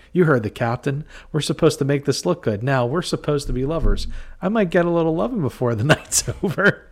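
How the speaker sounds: acted teasing, laughing speech. Retelling how a sergeant teased a patrolman: imitating someone laughing while talking. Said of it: "And he's starting to laugh".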